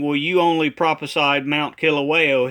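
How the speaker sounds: ordinary talk, nothing marked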